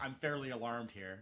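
perfectly composed, unbothered, calm, unhurried, no urgency. Quoting a movie line: calmly imitating Jeff Goldblum. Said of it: "He just calmly says".

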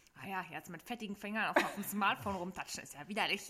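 snide remark, just barely audible. Retelling what a person sitting next to him said, disparaging half-loud mutter. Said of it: "abfällig angeguckt und dann so halblaut".

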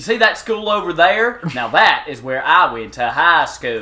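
put-on very loud, thick, wild Alabama accent. Describing a man with a wild Alabama accent, the speaker imitates him: imitating a crazy Alabama accent. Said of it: "craziest ass Alabama accent".

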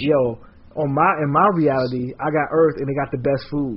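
ordinary talk

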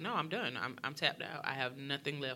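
put-on cold, remorseless tone. Retelling what she said while the speaker begged, imitating a cold, remorseless tone. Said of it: "she's showing no remorse".

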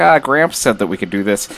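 ordinary talk, nothing marked

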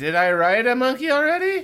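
very high, dazed, muddled voice. Mocking the writer as if on Quaaludes: imitating someone on Quaaludes. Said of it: "someone on Quaaludes who's like".

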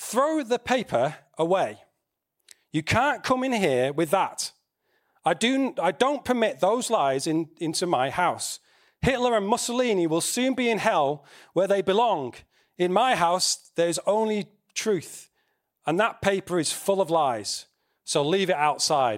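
normal talking voice

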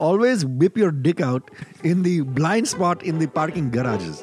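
put-on Indian accent. Giving parting words at the end of the show in a put-on indian accent. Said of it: "You doing the Indian accent again?".

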